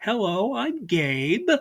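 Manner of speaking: put-on caricatured Yiddish-tinged accent.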